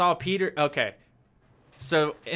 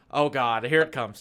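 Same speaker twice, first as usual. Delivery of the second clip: usual speaking voice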